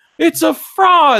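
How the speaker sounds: very high-pitched, shrill screaming. Retelling a movie scene where a nun stands up: imitating a nun screaming. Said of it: "a nun stands up and just starts screaming".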